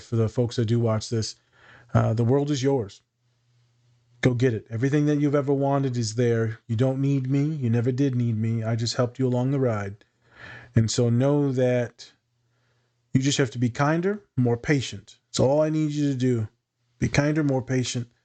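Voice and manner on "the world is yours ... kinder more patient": slow, soft, slowed-down speech. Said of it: "I like to slow down my speech, uh, soften my voice".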